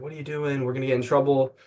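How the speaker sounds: ordinary talk, nothing marked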